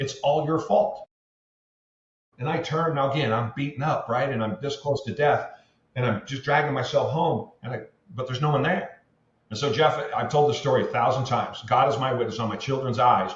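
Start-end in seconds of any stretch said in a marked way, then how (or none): 0.0-1.1 put-on crying scream, held to moderate volume. Speaker retells someone screaming from a duplex during his walk, imitating a scream. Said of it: "someone screams".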